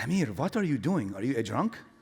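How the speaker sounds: put-on Persian-accented speech. Retelling his mom walking in on him looking at the rug, imitating mom's Farsi accent. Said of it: "I'm going to use the Farsi accent".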